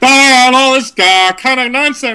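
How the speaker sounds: wild, pitched way up, loud.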